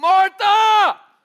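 high, loud call. Retelling the scene where Jesus calls out Martha's name: raising his voice. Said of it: "Jesus raised his voice to me".

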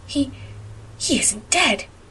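gasped out, soft and breathy, nearly whispered. Hearing a meow under the box, Anne gasps. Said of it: "gasped Anne".

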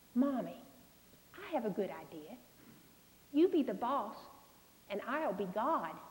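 sweetest possible sweet tone. A mother retells what her daughter said to her, in the sweetest voice possible. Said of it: "in the sweetest voice possible".

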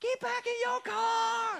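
high, slow yell with drawn-out car. Retelling how the brother yelled at the boys: imitating a yell in Mike Tyson voice. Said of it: "just yells. ... a little bit of a Mike Tyson voice".

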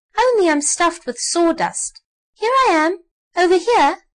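loud, squeaky, high-pitched voice. Narrator reading a doll who interrupts the stuffed elephant, high squeaky voice. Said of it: "a high, squeaky voice".

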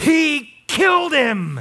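play-acted, high, all-out yell at full lung power. Retelling an answer to a hypothetical question: imitating Grant shouting. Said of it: "shouted at the top of his lungs".

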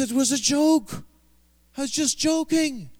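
put-on high Welsh accent. Retelling an anecdote, speaker quotes a man insisting it was a joke, in welsh accent. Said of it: "that's Welsh accent".

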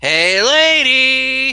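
high-pitched, loud, slow, yelping voice. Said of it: "Jerry Lewis style".

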